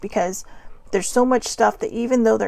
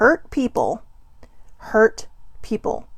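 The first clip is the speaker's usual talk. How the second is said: slow, unhurried, deliberate, word-by-word delivery. Repeating the phrase just said, now slower. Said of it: "I'll say that again slower".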